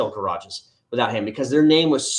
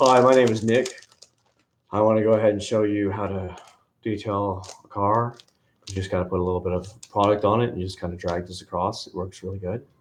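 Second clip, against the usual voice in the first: mock monotone, quiet reviewer voice; 4 semitones lower than usual. Mocking a car detailing reviewer's video, in a monotone, quiet reviewer voice. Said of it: "he's just so monotone and so just quiet".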